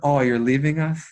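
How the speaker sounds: crestfallen, hurt-sounding, disappointed, let-down tone. Retelling how the guy sending the fax reacted: imitating a disappointed voice. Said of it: "his look of disappointment is".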